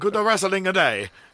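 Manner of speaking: put-on British man's voice. Showing the voice meant for the sign-off line: put-on astute British man voice. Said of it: "astute British man".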